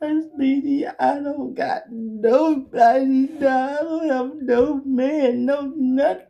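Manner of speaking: hard, very high-pitched, drawn-out sobbing wail. Retelling what a crying woman said at the speaker's house: imitating someone crying hard. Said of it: "Crying, I'm talking about hard".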